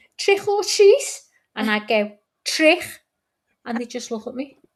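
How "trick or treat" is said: put-on very high, loud small child's voice with Scouse accent. Retelling trick-or-treating kids at the door at Halloween, little kids' Scouse accent. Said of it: "little Scouse accent".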